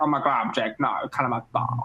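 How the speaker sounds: put-on Valley Girl accent. Recalling a favorite recording moment, doing a Lumpy Space Princess Valley Girl voice. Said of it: "kind of Valley Girl accents".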